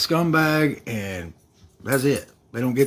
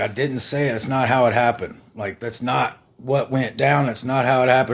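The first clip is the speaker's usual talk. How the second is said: ordinary talk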